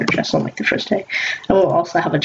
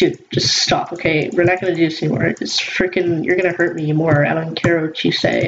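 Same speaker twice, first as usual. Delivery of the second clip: ordinary talk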